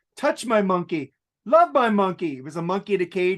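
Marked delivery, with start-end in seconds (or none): 0.2-2.4 put-on belted out loudly in a German accent. Speaker recalling Dieter from Sprockets for a friend, Dieter German accent. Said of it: "He was doing a German accent".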